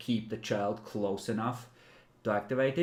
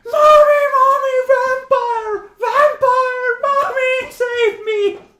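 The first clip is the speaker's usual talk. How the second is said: put-on very high, very loud, shrill, drawn-out child scream; 15 dB louder than usual. The game master voices a child in the story, child screaming. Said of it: "The child just screams".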